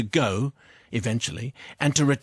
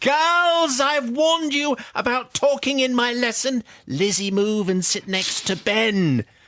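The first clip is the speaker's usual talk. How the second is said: very high, booming panto stepmother or teacher voice; 10 semitones higher than usual. Retelling the teacher scolding chatting girls in sewing class: booming Mrs Askew voice. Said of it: "This is the voice you use, isn't it?".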